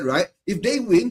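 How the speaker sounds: ordinary talk, nothing marked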